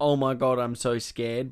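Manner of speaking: normal talking voice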